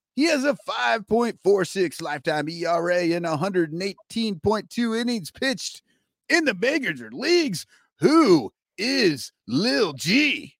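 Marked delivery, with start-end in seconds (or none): 8.0-10.4 breakfast-show radio dj patter voice. Host asks listeners to guess a pitcher's identity, morning zoo radio voice. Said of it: "you like my morning zoo voice?".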